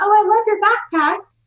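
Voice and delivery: put-on very high, tiny little child voice. Retelling what a little girl said about a backpack: imitating a little tiny voice. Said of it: "I heard the little tiny voice".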